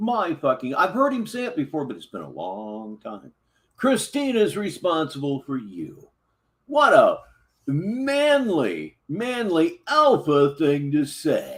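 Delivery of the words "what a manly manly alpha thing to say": very slow, swooping, heavily sarcastic delivery. Reacting to a man's remark about his responsibility, with thick sarcasm. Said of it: "I put on way too much sarcasm".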